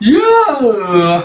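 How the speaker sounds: loud, high-pitched excited cheer. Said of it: "quickly peters out with excitement".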